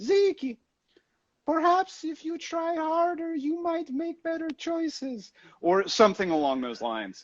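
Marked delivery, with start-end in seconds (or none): 0.0-5.3 put-on very high, soft, sweet Brazilian grandma voice. Imitating his late grandmother, the voice of his insecurities, in her quiet Brazilian voice. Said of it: "I just hear her her very quiet Brazilian voice go".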